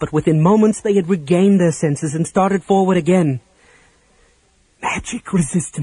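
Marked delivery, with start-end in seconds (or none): 4.8-5.8 awed murmur, quieter. Raceland, seeing the creatures regain their senses, murmurs in awe. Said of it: "Raceland murmured in awe".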